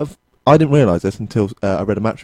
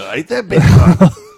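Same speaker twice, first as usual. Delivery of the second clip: put-on Glaswegian accent, higher and louder; 7 semitones higher, 7 dB louder than usual. Imitating a footballer interviewed on the radio: Simon Ferry impression. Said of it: "It's a good voice".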